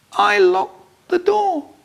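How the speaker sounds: feeble, weedy, very high little voice. A child narrator answers his dad, who is turning furious: weedy little voice. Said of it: "In a weedy little voice I say".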